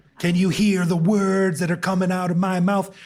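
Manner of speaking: high, loud, belted-out delivery. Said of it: "actor who was in Jackie Chan movie, Rush Hour".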